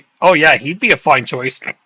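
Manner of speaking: put-on sarcastic football coach voice. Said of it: "I bet you Pep sarcastically said that".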